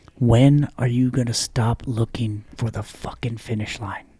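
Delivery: put-on steady, commanding, unhurried, soft, calm voice. Retelling what Garrett said while leaning down: imitating an authoritative but calm voice. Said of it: "very authoritatively, but calmly".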